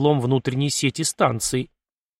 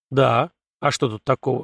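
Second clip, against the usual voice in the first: ordinary delivery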